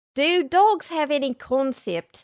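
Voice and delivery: attempted Australian accent. Taking a dare, the speaker asks a question in an attempted Australian accent. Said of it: "Here's me trying to do it in an Australian accent".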